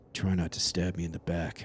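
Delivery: low, hushed, tense whisper. Retelling what he whispered when someone got right behind him, whispering. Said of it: "he just whispers".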